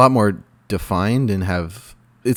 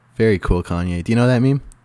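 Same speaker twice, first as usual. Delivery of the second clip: ordinary talk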